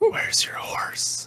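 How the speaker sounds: breathy, soft, hushed whisper. Player speaks in character to another character: whispering. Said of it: "I whisper towards Ulysses".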